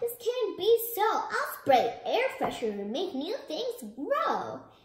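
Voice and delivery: loud, exclaiming cry with an objecting tone. Reading a story, the body protests to the house: crying out. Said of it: "cried the body".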